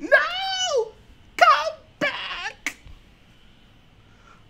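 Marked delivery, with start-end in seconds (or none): 0.0-2.8 very high, crying put-on young woman voice. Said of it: "That's my Ray impression".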